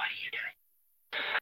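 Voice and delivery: stunned, breathless whisper.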